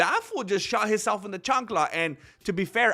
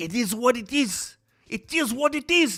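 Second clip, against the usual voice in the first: put-on Irish accent; 4 semitones higher than usual. Doing an impression of a fighter's catchphrase: Conor McGregor impression. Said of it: "that's gonna be my best Conor".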